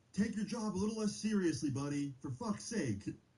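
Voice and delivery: mock high yell. Retelling how someone yelled at a security guard on the way out, retelling a yell. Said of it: "he yells at the guy".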